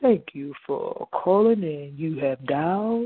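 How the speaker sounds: silky, smooth on-air radio announcer voice. Speaker shows the radio-host voice they always wanted, a smooth radio-host voice. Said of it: "had that smooth voice".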